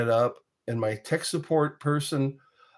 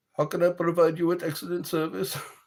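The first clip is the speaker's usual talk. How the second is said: put-on Indian accent; 5 semitones higher than usual. Retelling a tech support call, imitating an indian tech support accent. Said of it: "I don't know how good that imitation is".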